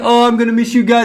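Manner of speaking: mock tearful crying voice. Mocking a man who walked out and started crying, imitating someone crying. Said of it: "starts crying".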